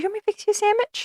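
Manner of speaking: play-acted very high, soft, super-nice sweetness. Imitating a woman who yelled, then offered a sandwich: mock super-nice. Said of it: "just super nice".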